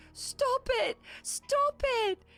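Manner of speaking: put-on sobbing ghost child voice. Voicing a ghost boy being asked how he died: sobbing ghost boy. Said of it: "the ghost boy is like sobbing now".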